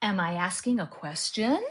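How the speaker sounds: pitch rises at the end. Inflection lesson, question example: rising pitch at the end. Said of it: "Your pitch will go up when you ask a question".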